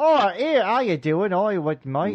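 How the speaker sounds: terrible, bad, put-on British accent. Imitating some American you thought they had on, doing a terrible fake British accent. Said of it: "doing a terrible like".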